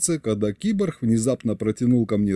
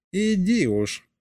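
said through a giggle, pitched up; 7 semitones higher than usual. A companion answers the narrator's offended reply, giggling. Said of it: "хихикнул Егорыч".

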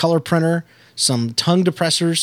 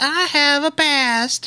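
put-on little-girl puppet voice, much higher; 12 semitones higher than usual. Describing a puppet character to the others, the speaker quotes it: little-girl puppet voice. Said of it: "He talks like a little girl".

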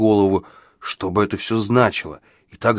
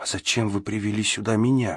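timid, shy and quieter; 6 dB quieter than usual. In the vault, the narrator questions the man responsible for it: timid question. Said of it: "робко поинтересовался я".

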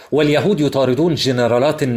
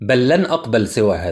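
usual speaking voice

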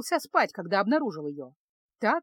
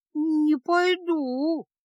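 high, trembling, quavering drawl, "пойду" drawn out; 6 semitones higher, 3 dB louder than usual. Feska, hiding deeper in the wagon, refuses the mage: trembling voice. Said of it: "дрожащим голосом протянула Феска".

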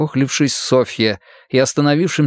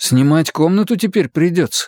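hesitant, unsure, tentative delivery; 4 semitones higher than usual. In a first-person story read aloud, the narrator offers a guess to a woman, uncertainly. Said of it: "предположил я неуверенно".

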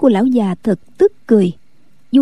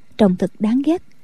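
ordinary delivery, nothing marked

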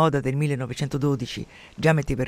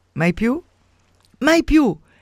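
impetuous, tender, laughing cry, very high; 10 semitones higher, 6 dB louder than usual. Narrator reads a woman answering a man who wants a last kiss, shouting while laughing tenderly. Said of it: "gli gridò ridendo con una tenerezza impetuosa".

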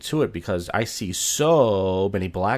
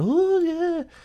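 very high, put-on lady voice. Retelling how coworkers imitated a woman: retelling coworkers' impression of a woman. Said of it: "doing an impression of her going".

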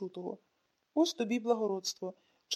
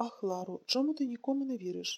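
plain reading voice

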